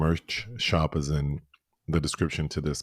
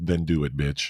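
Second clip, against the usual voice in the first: ordinary talk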